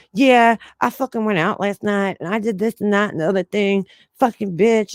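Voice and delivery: put-on chattery valley girl voice. Retelling a girl overheard on the phone in the hallway: valley girl voice. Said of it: "talking like a fucking valley girl".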